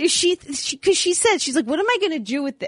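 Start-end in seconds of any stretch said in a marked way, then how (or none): 1.7-2.7 teasing, mocking, dismissive scoff. Retelling how a mother reacted to a gift of gold: imitating mother mocking. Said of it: "My mother was, uh, mocking me".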